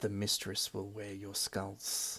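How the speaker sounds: slightest hushed half-whisper, barely audible. Voicing a creature in a fight, faint half-whisper. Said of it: "the slightest whisper of".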